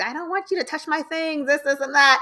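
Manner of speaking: high, mad, angry shouted yell. Retelling how a man yelled at her: imitating someone yelling. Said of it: "was yelling at her, like".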